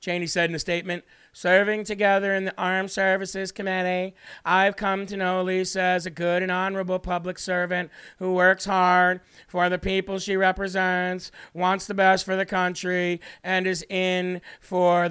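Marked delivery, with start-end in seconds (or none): 1.3-15.0 put-on monotone grandma voice, slower. Reading out Cheney's statement endorsing Elisa Slotkin to listeners, in a monotone, boring grandma-style Cheney voice. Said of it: "In her monotone, ridiculously boring grandma-style voice".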